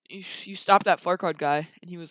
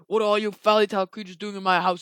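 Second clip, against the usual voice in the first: voice like an ogre. Retelling a story where someone confronts fairy-tale creatures: Shrek impersonation voice. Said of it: "in his perfect Shrek impersonation voice".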